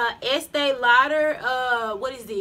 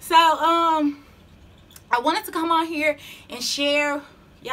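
out of breath, winded, speaking very slowly; 3 semitones higher than usual. Speaker talks to viewers just after coming from downstairs, out of breath. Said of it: "I'm out of breath".

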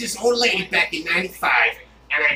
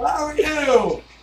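put-on speech as through a damaged jaw; 8 semitones higher than usual. Showing how a man talks after being hit in the jaw: imitating speech through a damaged jaw. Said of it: "now he talks like this".

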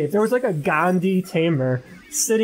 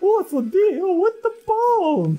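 very high, clownish comic voice. Quoting a sitcom scene, doing a Jerry Seinfeld impression. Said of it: "Do you like my Jerry Seinfeld impression?".

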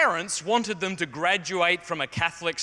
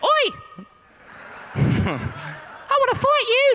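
very high, very slow, drawn-out schoolboy voice; 5 dB louder than usual. Retelling a schoolboy's challenge to fight: imitating a twelve-year-old kid. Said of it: "But he was twelve, so he went".

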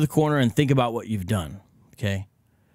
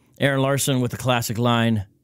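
normal talking voice

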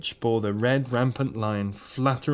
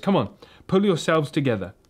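hasty, rushed, urgent tone; 4 semitones higher than usual. Peter, realizing it is up to him, speaks hastily to the others. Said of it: "hastily saying to the others".

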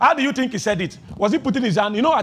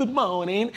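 mock British accent, quieter; 5 dB quieter than usual. Picturing people everywhere behaving like Christ: put-on British accent. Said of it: "Imagine somebody with a British accent".

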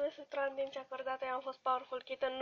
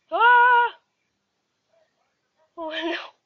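real scream, higher, louder, slower; 8 semitones higher, 15 dB louder than usual. Playing a game they fear, on night four, screaming for real. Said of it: "Am țipat pe bune!".

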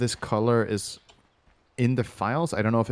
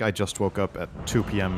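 ordinary talk

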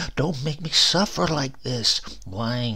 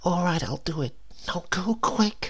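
high, soft, hushed whisper; 7 semitones higher than usual. Narrator reads a woman agreeing to a man's request, whispered. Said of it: "she whispered then".

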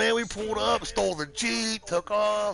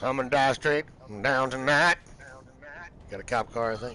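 ordinary delivery

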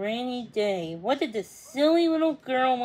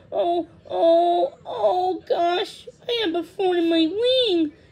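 high, loud, drawn-out cry of pain; 6 semitones higher, 6 dB louder than usual. A swallow with a sore wing, hugged too hard, is crying out in pain. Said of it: "he cried".

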